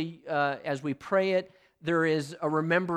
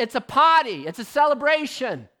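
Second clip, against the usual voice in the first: put-on Boston accent, higher; 8 semitones higher, 8 dB louder than usual. Quoting a man jumping behind the altar at a celebration: Boston accent. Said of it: "he had that Boston accent".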